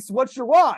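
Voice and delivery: high, loud screaming. Retelling someone screaming a question during a workout: imitating someone screaming. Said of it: "Somebody screaming in my face".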